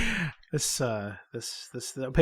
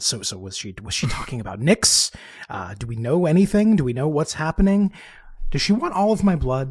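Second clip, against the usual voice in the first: loud stage whisper. Voicing a character who asks a companion quietly: stage whisper. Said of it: "in a stage whisper".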